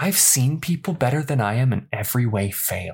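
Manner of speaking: harsh, rough whispered voice. A teenager answers Lucy's question about not making it: harsh whisper. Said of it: "in a harsh whisper".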